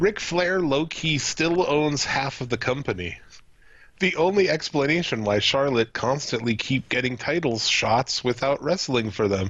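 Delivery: ordinary talk, nothing marked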